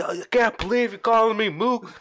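high, pissed-off, furious screaming. Retelling how a buddy reacted while the speaker was working, imitating a screaming shout. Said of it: "He was like screaming and shouting".

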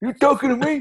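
very high, pitched way up. Doing an impression when asked for it: Robert De Niro impression. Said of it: "your Robert De Niro impression".

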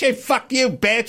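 mock crude yell. Describing unruly people in everyone's grill: imitating people yelling. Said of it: "they're yelling".

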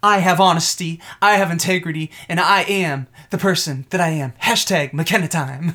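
mock rehearsed, scripted-sounding delivery. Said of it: "she's been rehearsing these lines for weeks".

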